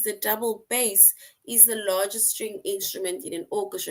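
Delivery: ordinary delivery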